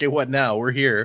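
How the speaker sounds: plain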